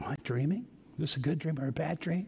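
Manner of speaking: hushed voice. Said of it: "He's whispering".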